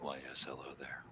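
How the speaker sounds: very soft, hushed, sinister, slasher-style creepy put-on voice. Acting out leaning in behind someone to greet them: put-on creepy voice. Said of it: "sounds creepy".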